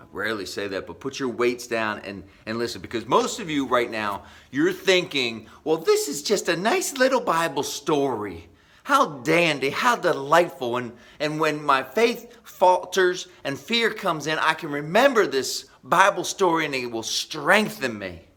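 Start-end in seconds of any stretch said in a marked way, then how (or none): 5.7-18.1 slow, drawling, put-on Southern lady accent. Speaker voicing what the audience is thinking, in a put-on southern lady accent. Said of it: "That was my Southern lady accent".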